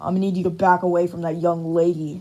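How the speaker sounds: forced low, deep put-on tough voice. Reading a story where a character confronts a robber: purposely deeper voice. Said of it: "purposely making his voice deeper".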